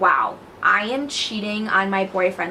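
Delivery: ordinary talk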